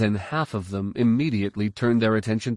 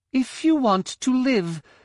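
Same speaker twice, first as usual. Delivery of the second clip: cold, chilly, high-pitched voice. A narrator reads a woman holding a blaster on the Solos, high but cold voice. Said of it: "Her voice was high but cold".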